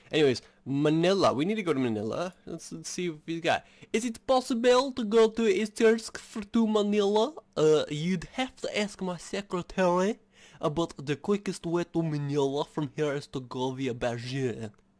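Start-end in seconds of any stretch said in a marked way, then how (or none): 7.9-14.7 odd, off-kilter put-on French accent. Asking how to reach Manila, the speaker voices the reply: weird French accent. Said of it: "It's like the weirdest French accent I have".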